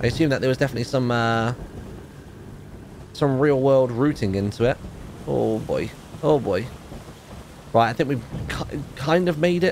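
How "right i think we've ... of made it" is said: uneasy, wary, hesitant, apprehensive half-confidence. Landing the boat ashore in the game, speaking apprehensively. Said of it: "I'm saying that very apprehensively".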